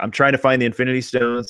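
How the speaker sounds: ordinary delivery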